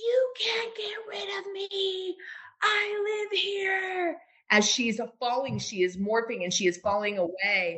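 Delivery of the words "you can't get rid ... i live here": mock very high, slow, stretched-out scream. Speaker retells a dream where a creature screams at her, imitating someone screaming. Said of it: "And she's screaming".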